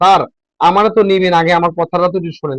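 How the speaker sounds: usual speaking voice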